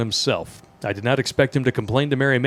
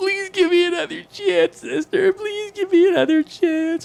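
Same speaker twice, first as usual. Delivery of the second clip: loud, very high-pitched, whiny pleading tone. Reading a story, voicing a first grader begging a nun: loud high-pitched whining. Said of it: "loudly whining in a voice that was unusually high-pitched".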